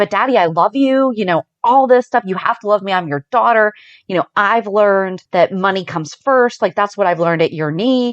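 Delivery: ordinary delivery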